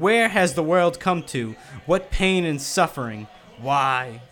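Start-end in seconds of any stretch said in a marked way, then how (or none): none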